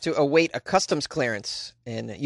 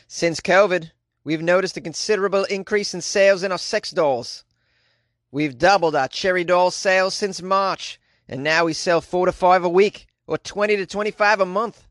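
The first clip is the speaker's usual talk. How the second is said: bad, terrible fake Australian accent; 2 semitones higher than usual. Speaker reads a quote from an online store owner, in a terrible Australian accent. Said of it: "That was a pretty terrible Australian accent".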